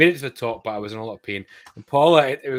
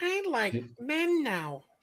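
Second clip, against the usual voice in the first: very high, soft, sing-song voice; 13 semitones higher, 9 dB quieter than usual. Describing a friend's impression of a cartoon character, then doing it: Ralph Wiggum impression. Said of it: "He's got the impression of Ralph Wiggum down".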